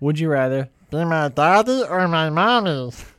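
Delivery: acted child voice. Asking a would-you-rather question in a changed voice, kid voice. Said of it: "It's my kid voice".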